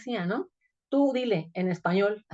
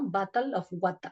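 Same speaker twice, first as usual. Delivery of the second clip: put-on British accent and pronunciation; 5 dB quieter than usual. Describing how people in Belize imitated British pronunciation: imitated British-style accent. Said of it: "imitar cierta eh, pronunciación como más al estilo británico".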